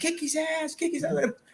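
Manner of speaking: acted-out scream, pitched way up high. Recalling a fight breaking out in a hotel lobby, retelling own screaming. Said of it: "And I'm screaming".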